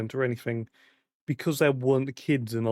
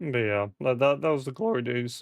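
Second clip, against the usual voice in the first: voice cracking. Recalling his world record, the speaker talks with his voice cracking. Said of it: "I don't know why I'm voice cracking".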